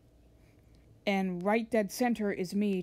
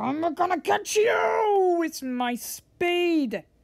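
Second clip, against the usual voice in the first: screaming, loud and high. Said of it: "she's, like, all screaming".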